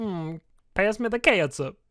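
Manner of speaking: bad Southern US accent. Imitating how people in the South say ketchup: bad Southern accent. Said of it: "That was a bad accent".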